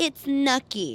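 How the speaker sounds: put-on high, babyish toddler-style baby talk. Telling a co-host about a man's reason for not liking celery: baby voice. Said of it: "in a baby voice".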